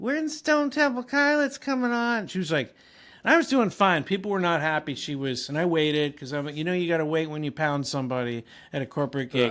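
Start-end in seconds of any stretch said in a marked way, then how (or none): 0.0-2.3 put-on very high, drunken woman's shouting. Recalling a drunk lady shouting during a set at a corporate gig: imitating a drunk woman yelling. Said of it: "starts like yelling".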